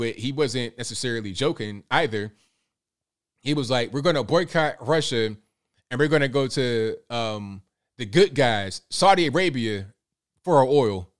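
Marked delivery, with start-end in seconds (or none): none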